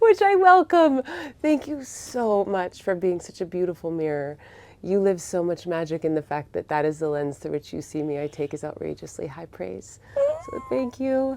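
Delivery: choked-up crying voice, swooping pitch. Speaker thanks the other person for their praise and thanks listeners, crying while speaking. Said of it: "I'm crying now".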